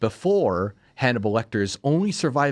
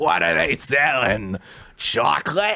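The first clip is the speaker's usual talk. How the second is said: put-on cartoon grandma voice; 3 semitones higher than usual. Comparing something to the grandma from SpongeBob, a SpongeBob granny voice. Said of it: "I nailed that voice".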